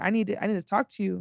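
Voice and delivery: put-on stern voice. Retelling what she said to them at the DMV: imitating someone stern. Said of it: "she comes back to me all stern".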